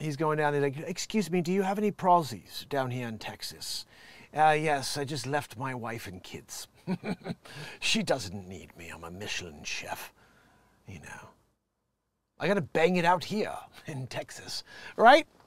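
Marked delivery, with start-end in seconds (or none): 0.8-14.6 put-on British accent, man's voice. Mocking a man who went to texas, the speaker does a british accent impression. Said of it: "Apparently he's a Brit".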